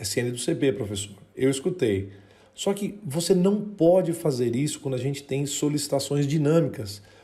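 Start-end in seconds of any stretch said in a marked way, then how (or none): 0.0-1.2 low, soft mutter under the breath. Retelling what a listener said under their breath: imitating someone speaking softly. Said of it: "eu escutei você falando baixinho".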